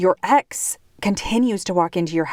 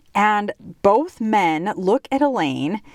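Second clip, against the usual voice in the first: ordinary talk, nothing marked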